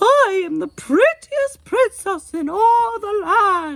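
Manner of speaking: very high, quavering falsetto with fake English accent. Made to say a line in the voice, warbling falsetto with fake English accent. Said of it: "changed his voice into a warbling falsetto with a faux English accent".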